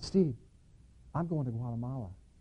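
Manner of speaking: tiny, feeble voice, barely above a hush. Speaker retelling his brother calling to him from the counter: imitating brother's little feeble voice. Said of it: "this little voice comes out".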